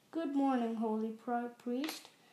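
ordinary talk

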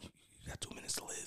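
put-on under-breath whisper. Recounting what a man said at a shared table, retelling a whisper under breath. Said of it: "he whispered it like under his breath".

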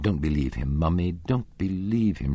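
ordinary delivery

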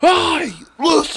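terrible put-on Brooklyn accent, very high pitch. Speaker pictures someone's fairy being from Brooklyn: terrible Brooklyn accent. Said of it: "that was a terrible Brooklyn. Accent".

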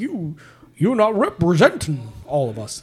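pitch swooping widely, words dragged out. Retelling how a comedian scolded a newcomer: terrible Bill Cosby impersonation. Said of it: "that's a terrible Bill Cosby impersonation".

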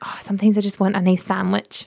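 ordinary talk, nothing marked

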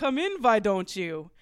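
put-on strange Eastern European accent. Narrator voicing a lanky man inviting a guest in, strange Eastern European accent. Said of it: "a strange Eastern European accent".

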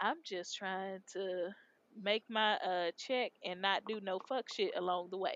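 ordinary talk

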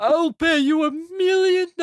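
very high, squeezed, strained voice. Quoting the million dollars guy, breaking off: imitating a strained voice. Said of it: "It's, like, so strained".

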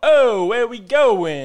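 over-the-top South Philly Italian accent, very loud, very slow. Explaining a tough-kid South Philly accent, demonstrating the real exaggerated Italian version. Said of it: "Real exaggerated Italian would be like".

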